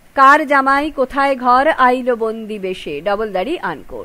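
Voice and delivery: ordinary talk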